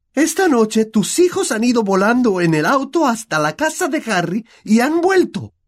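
loud shout, yelled out. A mother confronts her husband about what their sons did, shouting. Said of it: "gritó la señora Weasley".

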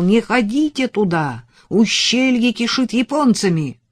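loud cried-out words, voice high. A truck driver leans out of his cab to a waving man: shouting. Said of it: "закричал".

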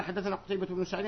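ordinary talk, nothing marked

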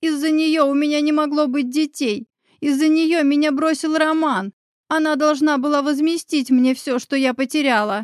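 high screech with the voice cracking. Elena answers the narrator's accusations, shrieking, voice breaking. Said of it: "заверещала Елена, срывая голос".

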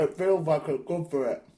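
talking with mouth full of food. Answering a friend while eating a biscuit: talking with mouth full. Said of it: "said through a mouthful of digestive".

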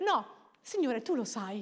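put-on grave, holy-sounding, serious, solemn tone. Mocking how people tell the Lord things, in a mock-serious tone. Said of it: "con un tono serio, così, come se fosse lo Spirito Santo".

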